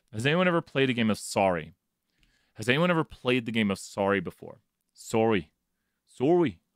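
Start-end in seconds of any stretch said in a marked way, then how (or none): 5.0-6.6 bad, horrible, over-the-top exaggerated Canadian accent. Joking with a group about the game Sorry, in a horrible Canadian accent. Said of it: "It's a horrible Canadian accent".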